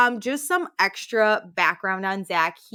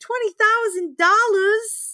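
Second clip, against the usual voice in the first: put-on very high, loud, strong Boston accent; 13 semitones higher, 5 dB louder than usual. Retelling how her mom said a money amount, in a Boston accent. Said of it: "it's so Boston".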